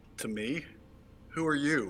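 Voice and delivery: disdainful, contemptuous, scornful tone. Answering someone in character: contemptuous tone. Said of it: "I'm still talking contemptuously".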